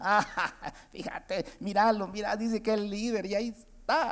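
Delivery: jeering, scoffing, sarcastic mockery. Explaining scoffers, speaker acts one out mocking a self-proclaimed leader, imitating sarcastic mockery. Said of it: "se empieza a burlar con, con sarcasmo".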